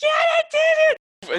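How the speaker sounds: very high, loud hollered call. Narrating a fight, voicing Felicity as she yells to David: Felicity yelling. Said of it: "you hear Felicity yell".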